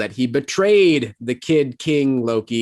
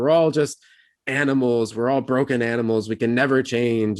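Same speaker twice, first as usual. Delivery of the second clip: plain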